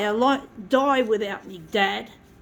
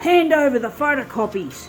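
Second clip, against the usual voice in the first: put-on stern, strict, commanding voice; 2 semitones higher than usual. Retelling Dad's demand after getting home in the car; mock-stern father voice. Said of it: "he said in a stern voice".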